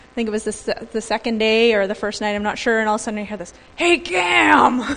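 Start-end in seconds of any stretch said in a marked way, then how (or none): 3.8-4.8 gruff, rough-edged voice. Retelling a friend suddenly calling out to him, imitating Greg's gruff call. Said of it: "in this, like, gruff kind of voice".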